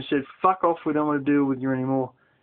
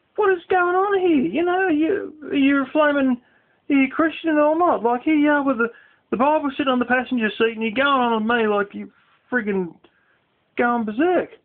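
put-on angry yelling, higher; 10 semitones higher than usual. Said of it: "the guy is yelling at".

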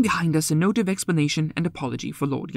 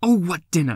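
impatient, losing-patience tone. The narrator answers Poirot's question about the dinner, impatient. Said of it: "I said impatiently".

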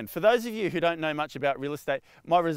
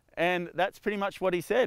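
usual speaking voice

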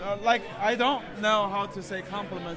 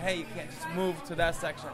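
usual speaking voice

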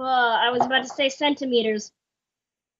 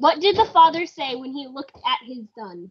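plain

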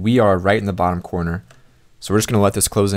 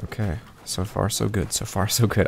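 quiet, anxious, nervous, hopeful tone; 6 dB quieter than usual. Playing a game, waiting for something to break after reaching the top 20, nervous. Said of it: "I am so nervous right now".

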